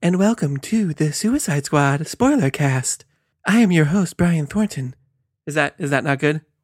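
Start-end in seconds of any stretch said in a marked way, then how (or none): 0.0-4.9 put-on calm podcast-host voice. Opening a podcast spoiler cast, speaker does a soothing NPR radio-host voice. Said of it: "let me get my podcast voice. ... I was just going NPR. Just trying to really soothe the tone".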